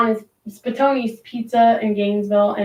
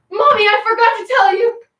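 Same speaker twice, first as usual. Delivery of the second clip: put-on very high-pitched, loud, dramatic little girl voice; 12 semitones higher, 6 dB louder than usual. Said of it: "She is just so dramatic".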